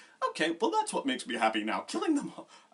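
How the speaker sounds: high, fast, genuinely happy voice. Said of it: "she makes it sound like she's genuinely like".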